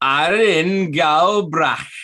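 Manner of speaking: high Welsh accent. A speaker says a phrase aloud, then names the accent: welsh accent. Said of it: "That was in a Welsh accent".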